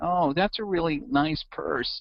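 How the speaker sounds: timid, squeaky voice. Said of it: "this guy in this mousy voice, sounded like George Costanza".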